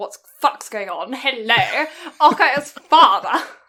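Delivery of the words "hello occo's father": put-on British accent. Telling a story, greeting a boy's father, in a put-on British accent. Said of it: "I've gone really British now".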